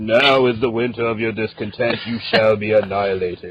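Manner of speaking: very deep, low narrator-style announcer voice. Showing how the vehicle's lines should be spoken: super deep narrator voice. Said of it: "super deep, like, narrator voice".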